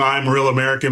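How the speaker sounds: ordinary talk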